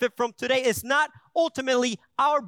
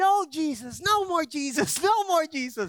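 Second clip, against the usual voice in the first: put-on small child wailing and screaming; 3 semitones higher than usual. Retelling how the child reacted to another church stop: imitating a child screaming. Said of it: "he just started screaming".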